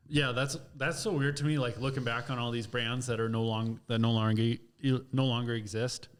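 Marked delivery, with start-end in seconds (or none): 1.6-6.0 stuttering, stumbling over repeated words. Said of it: "I'm stuttering tonight".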